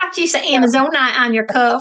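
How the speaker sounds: ridiculous, high, loud fake Southern accent. Joining a joke about sounding Southern: ridiculous put-on Southern accent. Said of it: "I just sound ridiculous when I try to sound Southern".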